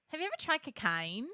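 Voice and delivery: put-on Australian accent, loud and high-pitched. Doing a clean take for the soundboard: Australian accent. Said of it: "let's do a clean one".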